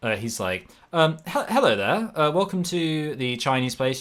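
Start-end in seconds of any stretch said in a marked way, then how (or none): 1.3-4.0 put-on British received pronunciation accent. Retelling the man who answered the Chinese restaurant's phone, imitating BBC received pronunciation. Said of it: "full on like B B C received pronunciation".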